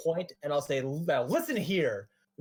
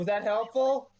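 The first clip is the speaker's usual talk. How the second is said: high voice breaking up with laughter mid-line; 6 semitones higher than usual. Answering in character while laughing: laughing in character. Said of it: "I'm laughing in character".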